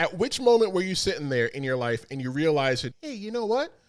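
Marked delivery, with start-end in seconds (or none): 3.0-3.7 put-on child voice, higher pitch. Imitating the other speaker as a kid wanting to wrestle: put-on kid voice. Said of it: "That's your kid voice".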